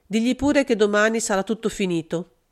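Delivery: plain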